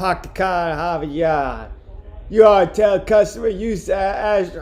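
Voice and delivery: effortful attempted Boston accent. Talking to Gunther, the speaker tries out an accent: trying a Boston accent. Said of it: "I'm trying to do a Boston accent".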